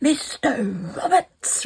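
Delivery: sudden, high-pitched call. Retelling a man calling a patient's name in the waiting room: imitating a loud name call. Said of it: "really loud".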